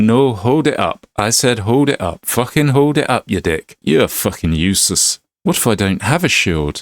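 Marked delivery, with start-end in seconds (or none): 0.0-5.2 fake Scottish accent, higher. Voicing a game trainer's lines about defending: put-on Scottish accent. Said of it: "Sorry about the Scottish accent".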